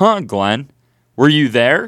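put-on sarcastic, jabbing tone. Retelling how a friend raised his hand and asked this, mock-sarcastic question. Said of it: "very sarcastically".

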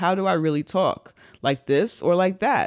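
normal talking voice

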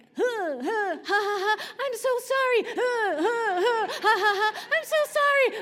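very slow, high, loud laughing, drawn-out "ha" and "sorry". Retelling apologizing to the women in the room: retelling a laughing apology. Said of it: "I'm going to laugh".

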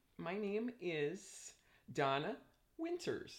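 over-enunciated, pausing between words. Introducing herself to a young man, pausing and over-enunciating each word. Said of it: "I just like to pause and elaborate my words so everybody can hear me as I enunciate them".

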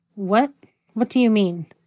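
plain reading voice

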